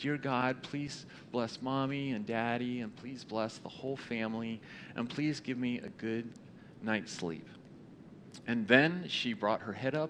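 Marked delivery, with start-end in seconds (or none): 0.0-7.5 soft, quiet, hushed bedtime voice. Telling a story about a girl praying at bedtime, in a quiet voice. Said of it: "in a quiet voice".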